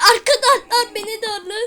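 frightened panic. Being chased by Piggy in a game with friends, scared and panicking. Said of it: "korkudan altıma işiyorum".

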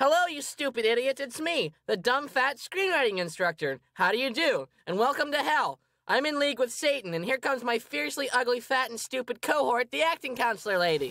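mocking parody in a very high voice. Performing a skit as the screenwriting counselor: mocking the screenwriting counselor. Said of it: "It's the advanced screenwriting counselor".

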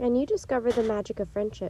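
ordinary delivery

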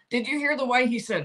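plain

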